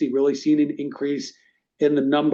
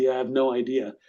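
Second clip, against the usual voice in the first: put-on muttering under breath. Retelling an answer to clients: mumble under breath. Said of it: "mumble under my breath".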